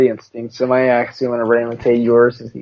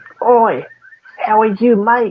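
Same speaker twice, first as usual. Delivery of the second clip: very high-pitched, slow, drawn-out put-on Australian accent; 10 semitones higher than usual. Arguing about accents with the other speaker, a speaker does an australian accent. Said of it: "That's Australian".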